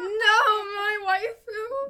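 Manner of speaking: loud, very high, deliberately cracking voice. Choosing to kill off a favourite character, the speaker protests with a cracking voice. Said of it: "my voice cracks".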